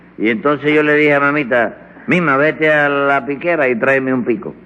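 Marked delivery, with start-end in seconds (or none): none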